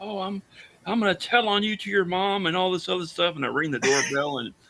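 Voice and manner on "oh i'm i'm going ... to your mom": mock, high-pitched, furious screaming. Retelling what a woman screamed through the bedroom window, imitating her screaming. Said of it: "she's screaming through the bedroom window".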